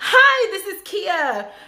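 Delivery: very high, very slow, loud, bubbly, energetic voice. Contrasting with a calmer manner she used: put-on high, energetic greeting. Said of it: "that high pitched, energetic".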